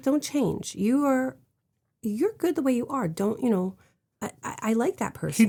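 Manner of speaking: soft, earnest, grave, quiet, serious sincerity. Retelling what he told her in the scene, imitating a quiet, serious delivery. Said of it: "He said it very quietly and very seriously".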